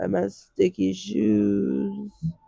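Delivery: rough, very slow, cold, croaking voice. Comparing own cold to a TV episode: Phoebe with a cold voice. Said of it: "I'm like Phoebe on that episode of Friends".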